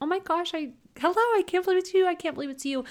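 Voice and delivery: put-on squealed, very high, excited delight. Retelling meeting an online friend in person, retelling an excited squeal. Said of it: "kind of squealed like".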